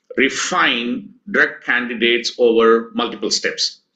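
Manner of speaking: normal talking voice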